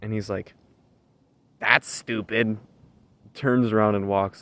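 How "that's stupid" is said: bratty, petulant, put-on tone. Retelling a customer's reply after being refused a tan: imitating a bratty tone. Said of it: "the brattiest tone".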